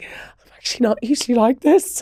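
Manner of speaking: words pushed out through acted, high, tearful crying. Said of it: "I burst out crying again".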